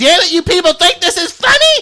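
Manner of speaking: put-on squeaky mouse voice. Retelling how someone's mic voice was changed mid-rant: imitating a little mouse voice. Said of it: "he sounded like a little mouse".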